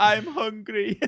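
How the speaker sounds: put-on Middle Eastern accent. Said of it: "I've got the accent down".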